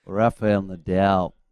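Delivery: put-on American sportscaster accent and voice. Playfully calling a tennis match as the commentator, in a put-on American commentator accent. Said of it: "Why are you American all of a sudden?".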